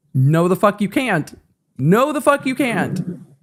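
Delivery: mock curt, blunt tone. Retelling a judge refusing a recess: imitating a judge's blunt refusal. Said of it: "Judge Hay is just like".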